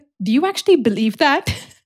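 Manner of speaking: put-on serious tone. Retelling the manager's reply to a text: imitating the manager's serious tone. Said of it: "I spoke in the same tone as him".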